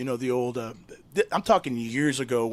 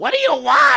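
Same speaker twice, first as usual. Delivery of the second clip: piercing scream, very high and very loud; 13 semitones higher, 11 dB louder than usual. Retelling a radio skit where Yolanda answers the caller: imitating Yolanda screaming.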